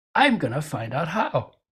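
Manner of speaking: put-on brash, cocky, sure-of-itself kid voice. Recalling a thought from one day, voicing it: imitating a cocky little voice. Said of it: "this little cocky voice says".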